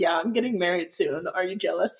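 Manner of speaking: ordinary talk, nothing marked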